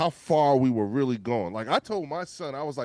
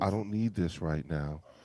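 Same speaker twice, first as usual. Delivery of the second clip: put-on forced calm voice, lower and quieter; 7 semitones lower, 6 dB quieter than usual. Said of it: "talk to you with that calm voice".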